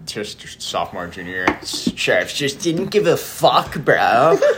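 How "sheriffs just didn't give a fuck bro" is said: put-on smug douchebag bro voice, pitched up. Chatting about school classes, saying a line in a put-on douchebag voice. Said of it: "I had to say it in the douchebag voice".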